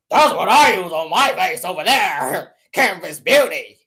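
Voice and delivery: mocking, very low, deep voice. Mocking a woman who recommends Canvas Beauty: imitating a deep voice. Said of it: "Oh, deep ass voice".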